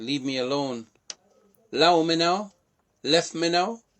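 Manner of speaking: high, very loud, booming put-on Jamaican patois. Teaching jamaican phrases one by one, the speaker says this in a jamaican accent.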